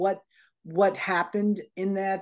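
normal talking voice

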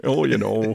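speaking with Wisconsin accent.

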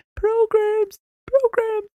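very high, meek, timid cry. Recalling a job yelling programs, showing how a shy person would: imitating a shy program yell. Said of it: "If you were shy, trying to yell programs".

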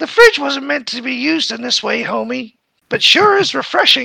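high, creaky, raspy nagging voice. Retelling a scene where she walks in on Homer's fridge; mock-nagging Marge Simpson voice. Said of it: "in her usual nagging tone mentioned".

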